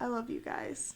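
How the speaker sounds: soft whisper. Playing a character hugging Ava goodbye: whispering in someone's ear. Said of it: "I'm gonna whisper in your ear".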